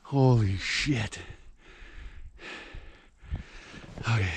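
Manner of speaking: winded, panting, gasping between breaths. Stopping on a slushy trek with a sled, out of breath. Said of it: "I gotta catch my breath".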